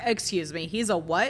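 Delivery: ordinary delivery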